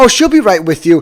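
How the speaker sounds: put-on condescending tone. Retelling what the girl said to the speaker, in a mock-condescending tone. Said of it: "kind of in a condescending tone".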